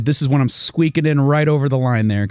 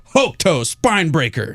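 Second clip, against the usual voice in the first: put-on mock shout of an attack call, slower; 4 semitones higher than usual. Describing a video game to others, imitating the character's shout. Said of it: "the game like stops and he shouts like".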